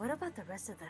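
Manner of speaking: whispered line in character voice. Voicing a character who leans down to ask the others: whispering in character. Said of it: "lean down and whisper".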